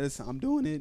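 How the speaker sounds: voice breaks on the words. Imagining what to say to the family, voice cracking. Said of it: "Ooh, voice crack".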